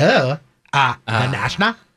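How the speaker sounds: low, incredulous, disbelieving, superior tone. Describing a type of guy who answers a question about a band, imitating how he says it. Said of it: "That's how he would say the band".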